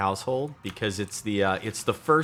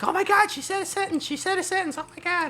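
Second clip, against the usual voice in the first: mock very high-pitched, thrilled, excited gushing. Retelling a parent's reaction to a baby's first sentence: imitating an excited mom. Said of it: "gets all excited".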